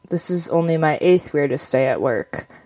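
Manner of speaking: normal talking voice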